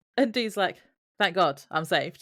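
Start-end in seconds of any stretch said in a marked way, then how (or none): 1.2-2.3 mock heavy sarcasm, clearly not meant. Retelling a scene where Dean greets his lawyer: imitating Dean's sarcasm. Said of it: "in a really sarcastic way".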